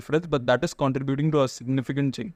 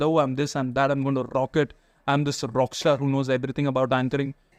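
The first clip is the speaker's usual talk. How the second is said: ordinary talk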